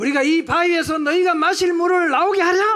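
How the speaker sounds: angry outburst, loud, high, furious shouting. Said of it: "이러면서 화가 나서".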